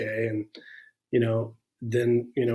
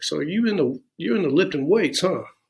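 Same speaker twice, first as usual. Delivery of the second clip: put-on real heavy Alabama accent, pitched up; 5 semitones higher than usual. Retelling what his first sergeant asked him about lifting weights: thick alabama accent. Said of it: "he had this real thick accent".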